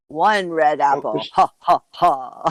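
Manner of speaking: every word drawn out, very slow. Imitating the Count from Sesame Street counting: Count from Sesame Street voice. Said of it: "And he'd go".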